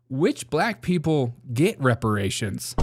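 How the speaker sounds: ordinary delivery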